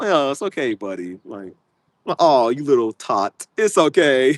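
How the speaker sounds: put-on mocking tone. Speaker retells how they answer people who argue with them, mocking someone. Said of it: "I'm just gonna have to mock you".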